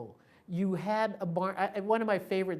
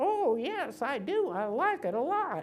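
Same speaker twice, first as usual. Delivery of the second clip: put-on craggly old voice, higher; 7 semitones higher than usual. Retelling a phone call from an old woman: imitating an old craggly voice. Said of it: "speaking with an old craggly voice".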